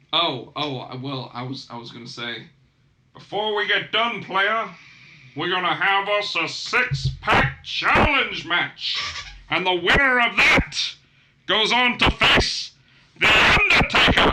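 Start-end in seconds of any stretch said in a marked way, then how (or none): 3.1-14.3 loud, big, high hollering voice. Announcing a six-pack challenge match as Teddy Long: Teddy Long impression. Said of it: "It's better than your Teddy Long".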